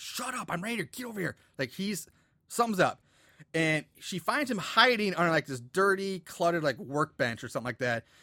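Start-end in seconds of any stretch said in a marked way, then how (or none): 0.0-1.4 high, hushed half-whisper. Retelling a movie scene, a hidden character calls someone over: imitating a half-whisper. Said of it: "she finally hears Jason whispering".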